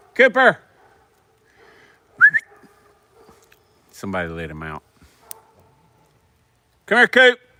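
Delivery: shrill, booming, swooping, very loud, high rising yell. Calling out to the dog cooper when somebody lets him out, yelling. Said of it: "I'm sorry I'm yelling at you guys".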